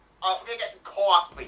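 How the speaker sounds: put-on Brooklyn accent. Speaker shows off a brooklyn accent they practice: brooklyn accent. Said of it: "I practice my Brooklyn accent".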